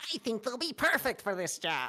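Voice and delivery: adorable, cute, tiny dwarf voice. Voicing the little dwarf turning to another character, in an adorable dwarf voice. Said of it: "That was adorable".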